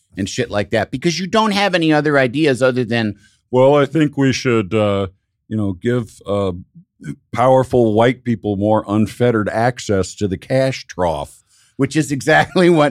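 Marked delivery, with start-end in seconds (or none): 3.5-11.5 scornful, low, derisive mocking put-on voice. Mocking what politicians with no ideas would say: mocking impression. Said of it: "that impression was amazing".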